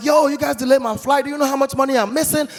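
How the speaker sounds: irate, high, angry shouting. Retelling an angry complaint about a delayed flight: imitating his own yelling. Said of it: "So I was yelling".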